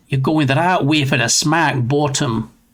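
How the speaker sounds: put-on Scottish accent. Speaker doing their usual scottish phrase from a movie: scottish accent. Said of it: "that's usually my, my Scottish phrase".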